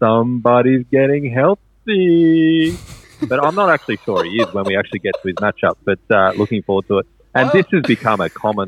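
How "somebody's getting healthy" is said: goofy high put-on voice, "healthy" drawn out. Someone asked the speaker to say this line in a Happy Gilmore voice. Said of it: "he wanted me to say that in a Happy Gilmore voice".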